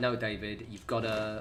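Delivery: ordinary talk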